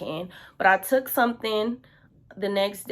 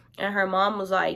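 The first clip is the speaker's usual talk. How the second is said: usual speaking voice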